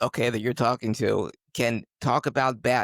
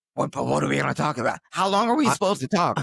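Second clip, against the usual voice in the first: mock freaked-out, fast, jittery, nervous panic; 3 semitones higher than usual. Retelling how the other speaker came to him before the show: imitating someone panicking. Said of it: "he's freaking out, nervous".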